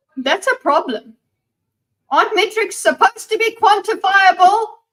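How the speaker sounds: worked-up, loud yelling, climbing very high in pitch. In a conversation, the speaker yells at the other person. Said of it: "I'm yelling at you".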